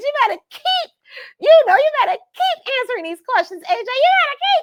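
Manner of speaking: proud voice climbing very high and loud. Cheering on a guest while watching his interview back, proud, voice going higher. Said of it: "the more proud I get, the higher my voice gets".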